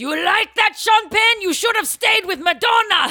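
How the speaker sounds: very high, very loud, shrill put-on Ukrainian accent. Acting out a ukrainian grandmother talking to sean penn: imitating a ukrainian grandmother's accent. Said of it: "what's the accent?".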